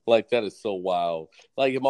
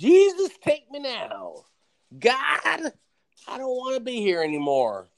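mock high, swooping, drawn-out top-of-the-lungs scream; 14 semitones higher than usual. Describing how she would react, imitating her screaming at the top of her lungs. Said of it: "screaming at the top of her lungs".

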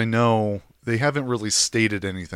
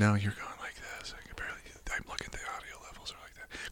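unvoiced, mock whisper. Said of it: "you just whispered".

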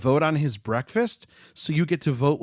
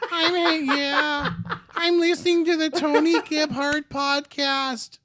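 put-on cartoon boy voice, much higher. Giving a shout-out for the Tony Gebhardt podcast, Carl Wheezer voice. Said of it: "This is Carl Weezer".

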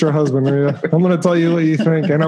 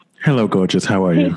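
very deep, sultry, low voice; 9 semitones lower than usual. Asked to say hi, greeting someone in a deep sultry voice. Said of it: "I'm giving you my deep sultry voice".

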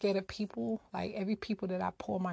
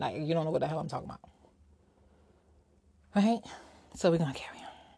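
out of breath, faster; 4 semitones lower than usual. Talking to listeners, the speaker is out of breath. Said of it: "I don't know why I'm out of breath".

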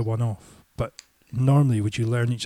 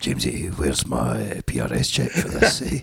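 very low, rough, creaky, sing-song, swooping drawl; 11 semitones lower than usual. Imitating the songwriter phoning about a missing royalty check: imitating the songwriter's voice. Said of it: "you've actually got his voice".

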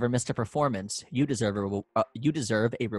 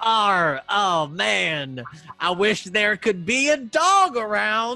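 higher, louder put-on pirate mouse voice; 10 semitones higher, 5 dB louder than usual. Retelling a castmate's stage line while waiting for the dog: put-on pirate mouse voice. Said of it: "he was a pirate mouse. And he was like".

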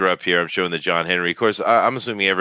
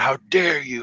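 put-on yelling and screaming, higher; 7 semitones higher than usual. Retelling how people reacted to a movie casting: imitating people yelling and screaming. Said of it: "they yelling and screaming".

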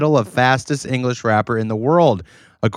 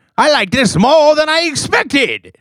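very high put-on cartoon old prospector voice; 12 semitones higher, 3 dB louder than usual. Repeating back how the other speaker just sounded, mimicking old cartoon prospector voice. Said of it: "this is what you sounded like".

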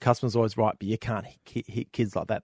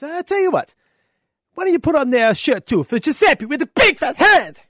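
very high, very loud, shrill Italian man voice; 9 dB louder than usual. Telling a joke, the speaker acts out the Italian guy's line to the tailor. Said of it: "the Italian guy sits back and says".

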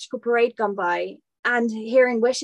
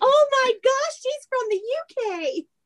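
fake American accent, pitched very high; 14 semitones higher than usual. Retelling how a passing family reacted on hearing her, imitating an American accent. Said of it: "the UK is exactly how Americans say it".

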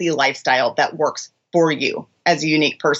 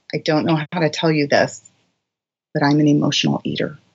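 put-on very hushed, quiet tone. Retelling what a client once confessed: imitating a very hushed tone. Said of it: "in a very hushed tone".

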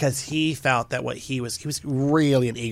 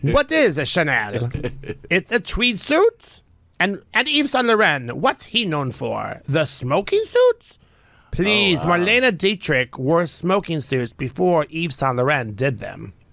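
fake, sing-song Italian accent held throughout; 4 semitones higher, 4 dB louder than usual. Speaker who can't do French switches to Italian; fake Italian accent. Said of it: "We're just gonna do Italian".

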